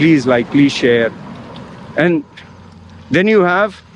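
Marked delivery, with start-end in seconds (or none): 0.0-1.1 mock pleading, begging voice. Mocking someone who asks viewers to subscribe: imitating someone begging. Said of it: "Someone is just begging".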